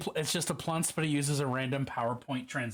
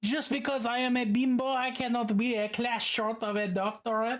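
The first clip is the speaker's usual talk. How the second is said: put-on French accent with voice lifted way up; 10 semitones higher, 4 dB louder than usual. Reading a phrase aloud again, the speaker drops into a French accent. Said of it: "I just had to drop into it".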